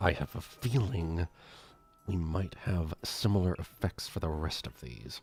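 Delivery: through clenched teeth. A character who just gingerly handed over a wand speaks, through gritted teeth. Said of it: "as she's saying this through like gritted teeth".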